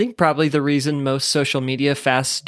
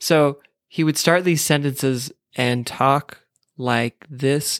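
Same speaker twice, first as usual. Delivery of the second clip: usual speaking voice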